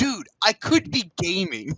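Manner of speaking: slow turtle character voice, words stretched and drawn out. Quoting a voice intro line from a game: Michelangelo voice. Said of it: "to which fucking Michelangelo goes".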